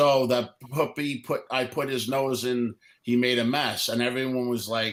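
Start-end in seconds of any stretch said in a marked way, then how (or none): none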